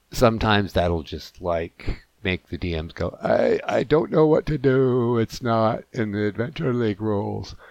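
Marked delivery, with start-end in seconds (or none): 3.2-7.5 dim, dopey, put-on dummy voice. Mocking how DMs react to players who think outside the box, dummy voice. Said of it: "it's my dummy voice".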